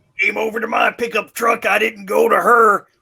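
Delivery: mock irate, high-pitched, shouted rant, belted out.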